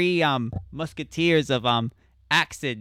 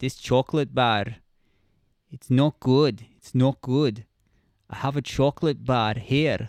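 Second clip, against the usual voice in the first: clumsy, bad put-on Scottish accent; 2 semitones lower than usual. Speaker admits Scottish guests would object, then tries it anyway: bad Scottish accent. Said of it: "Do a Scottish".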